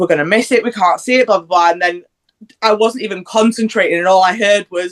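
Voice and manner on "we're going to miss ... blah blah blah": ordinary talk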